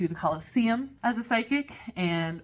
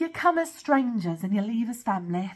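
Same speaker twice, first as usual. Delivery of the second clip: clumsy, bad put-on Greek accent; 3 semitones higher than usual. Quoting one of the tour guides to future travelers, in a bad accent. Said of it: "I'm going to do a bad accent here".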